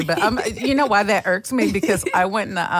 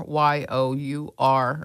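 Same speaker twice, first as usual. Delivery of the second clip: each letter spelled out slowly, one by one. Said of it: "don't forget about your".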